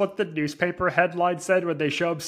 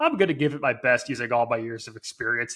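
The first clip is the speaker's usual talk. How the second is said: put-on offhand, casual, nonchalant tone, lower; 5 semitones lower than usual. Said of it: "it's so nonchalant".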